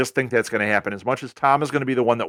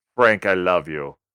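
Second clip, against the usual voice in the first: put-on low, deep-voiced Lourdes accent; 4 semitones lower than usual. Imitating Lourdes telling Frank she loves him: Lourdes accent, deep voice. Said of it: "nice Lourdes accent right there".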